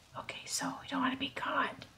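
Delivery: hushed, soft, sneaky whisper. Playing a game, sneaking so as not to be caught, whispering. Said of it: "Why am I whispering?".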